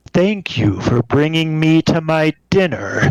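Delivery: menacing, sinister monster creature voice. A creature standing over Gardrim speaks to him, in a sinister voice. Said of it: "speaks in a sinister voice in common".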